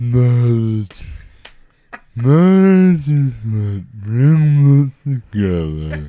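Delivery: put-on slurred speech. Joking about sounding like a stroke, the speaker does a Dick Clark impression. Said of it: "I'd be like Dick Clark".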